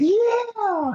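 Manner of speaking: put-on very high little-boy yell, stretched long. Retelling a fight, a boy in the crowd screaming: imitating a boy screaming. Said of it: "he's screaming, like".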